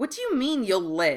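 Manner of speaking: pressing, insistent, demanding tone. He follows another man out, insisting on an argument, demanding. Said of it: "Draco demanded".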